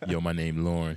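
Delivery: imitated Jamaican voice. Retelling how someone they know introduces himself: jamaican nighttime voice. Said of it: "with his Jamaican nighttime voice".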